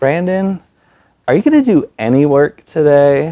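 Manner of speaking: sugary sweet, small little voice. Retelling what Sue asked Brandon, imitating Sue's sweet little voice. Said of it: "in the sweetest little voice".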